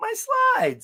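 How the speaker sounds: voice gone very high-pitched and squeaky. Retelling a big guy losing his slides at the lake, imitating a big guy's high voice. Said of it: "His voice got all high".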